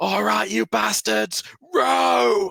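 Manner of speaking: very high, raging, furious scream, drawn out. Narrating the scene, the Allmaster turns around to scream: Allmaster screaming. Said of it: "The Allmaster turns around and screams".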